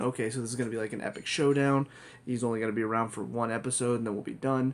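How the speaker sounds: usual speaking voice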